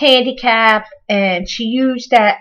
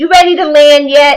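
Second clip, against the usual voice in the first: loud, cocky, teasing, ribbing delivery; 4 semitones higher, 7 dB louder than usual. Retelling how the uncle teased the grandfather: imitating a cocky tease. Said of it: "real cocky".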